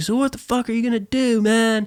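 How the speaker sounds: super belligerent, very high-pitched delivery. Retelling a late-night talk with a buddy in Canada: imitating John Taylor being belligerent. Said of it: "all just super belligerent".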